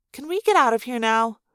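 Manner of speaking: ordinary delivery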